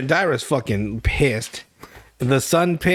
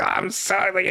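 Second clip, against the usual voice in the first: mock smug tone, higher and slower; 4 semitones higher, 3 dB quieter than usual. Retelling how a man apologized, mocking his smug tone. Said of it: "he had this such a smug".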